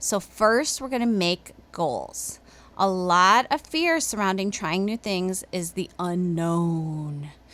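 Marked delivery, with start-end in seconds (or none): 5.7-7.3 put-on deep radio announcer voice. Explaining fear of new things, saying 'the unknown': radio announcer voice. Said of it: "that was sort of my my radio announcer voice".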